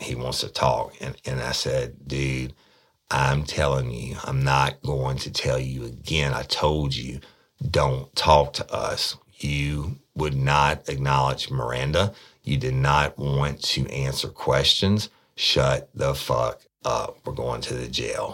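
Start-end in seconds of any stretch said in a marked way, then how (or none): 2.1-18.3 mock menacing, threatening voice. Speaker retelling how he silenced a talkative arrestee in the car, retelling a threatening voice. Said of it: "with I'm going to beat your ass voice".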